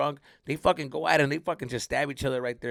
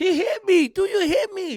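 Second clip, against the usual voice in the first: very high, whiny crybaby voice; 4 dB louder than usual. Retelling getting punched during a corner kick, whining like a crybaby. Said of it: "like a fucking llorón".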